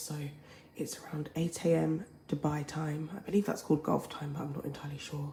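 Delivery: whispered speech. Early-morning video update in Dubai, whispering. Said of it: "I'm whispering because why not?".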